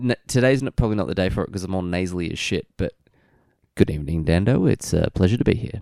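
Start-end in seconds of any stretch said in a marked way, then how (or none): 3.7-5.8 slightly louder radio announcer voice. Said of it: "if I desperately needed to".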